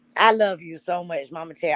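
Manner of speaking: choked up, voice catching, holding back tears. At a birthday celebration, speaking to the birthday person; holding back tears. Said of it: "I'm trying not to cry".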